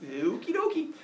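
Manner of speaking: high, laughing delivery. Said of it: "He goes".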